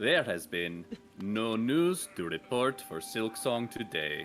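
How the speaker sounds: put-on, fake, almost-German accent. Asked to show an accent, the speaker plays a news host in an almost-German put-on accent. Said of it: "that sounds almost German".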